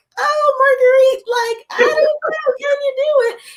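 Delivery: tiny frightened voice, pitched way up, slow. Describing two inner voices, the speaker imitates a little scared voice. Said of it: "One's like the little scared voice".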